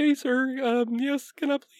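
put-on boyish, pre-adolescent young boy voice. Recalling how he played a game character as pre-adolescent: little young man voice. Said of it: "doing my little young man voice".

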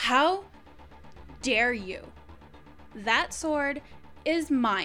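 angry, furious. Voicing a young leader who claims the sword Kara flung: angry. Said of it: "she is extremely angry".

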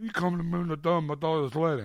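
put-on mob boss voice, cotton-stuffed cheek sound. Retelling a dental visit with cotton in the mouth: Brando in The Godfather voice. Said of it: "I feel like Brando and Godfather".

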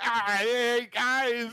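put-on tipsy, drunk-sounding spider voice. During the game, a player imagines a drunk spider talking: drunk spider voice. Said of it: "imagining a drunk spider like".

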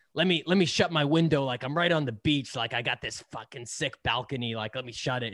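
put-on heavy New Jersey accent, laid on thick. Quoting a man from Manhattan Beach, use a thick New Jersey accent. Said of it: "he's got this thick, like, New Jersey accent".

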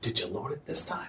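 whispering. In a tabletop game, a character glances back and whispers to him, whispering. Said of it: "then I whisper to him".

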